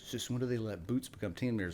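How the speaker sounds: normal talking voice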